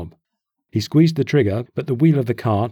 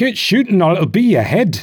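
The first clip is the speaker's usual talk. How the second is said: loud, high shouting cry; 8 semitones higher, 5 dB louder than usual. Burback answers Moxie, who complains about his hand, crying out. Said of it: "Burback cried".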